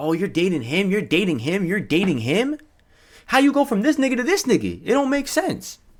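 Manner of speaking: high, sing-song, teasing mocking tone. Retelling how schoolmates reacted to the dating: imitating mocking classmates. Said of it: "making fun of her".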